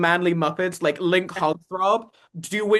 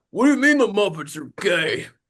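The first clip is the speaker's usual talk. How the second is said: puppet monster character voice. Speaker imagines a fifty-something listener objecting; sounding like a Sweetums cousin. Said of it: "accidentally sounded like a cousin of Sweetums".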